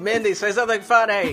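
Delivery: high call projected across the room.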